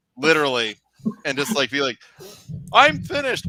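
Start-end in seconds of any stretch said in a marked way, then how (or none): 2.7-3.5 very high-pitched frog puppet voice. Imitating Kermit acting the Daniel Day-Lewis role: Kermit voice. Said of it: "That's a good Kermit".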